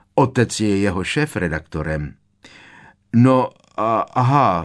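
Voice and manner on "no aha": embarrassed, flustered stammer, higher and louder. Learning the girl's father edits the magazine she mocked, she gives an embarrassed stammer. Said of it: "zakoktala rozpačitě Hermiona".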